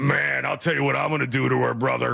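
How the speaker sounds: put-on bro wrestler voice. Imitating how guys talk on a dating show: Hulk Hogan impression. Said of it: "that's Hulk Hogan".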